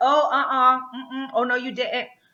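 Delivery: slow, meddling chorus voice with put-on affected accent. Acting out a greek chorus as a meddling mother-in-law: put-on accent as a meddling chorus. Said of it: "they'd be like".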